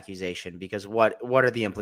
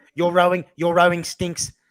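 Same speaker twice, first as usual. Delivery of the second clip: botched put-on accent, not Australian, higher and louder; 8 semitones higher, 7 dB louder than usual. Imitating him from the online content in a South African-sounding accent. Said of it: "That was a South African accent".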